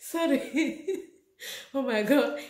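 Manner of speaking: laughing through the words. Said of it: "you see, I'm laughing now".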